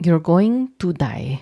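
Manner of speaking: Filipino accent, put on. Answering a listener's question after being asked: filipino accent. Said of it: "In your Filipino accent".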